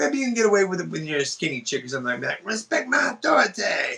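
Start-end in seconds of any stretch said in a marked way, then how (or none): 2.4-4.0 high, swooping put-on cartoon character voice. Retelling how a girlfriend talked: Cartman voice. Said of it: "to make the Cartman voice".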